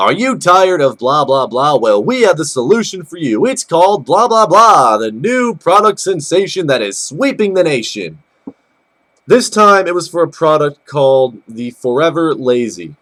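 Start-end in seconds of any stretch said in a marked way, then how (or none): 0.0-8.2 TV commercial pitchman, infomercial announcer voice. Recounting a commercial heard on the tv after the game, infomercial announcer voice. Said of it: "I hear the familiar announcer voice".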